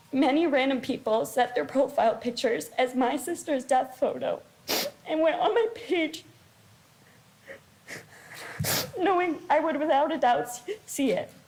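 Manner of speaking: tearful, weeping, crying voice. A teenage girl speaks about her late sister, crying.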